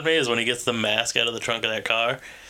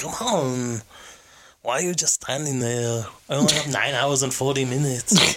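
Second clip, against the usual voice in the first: imitated, put-on whisper. Retelling what a man urged in a mall restaurant, imitating his whisper. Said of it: "He's like whispering".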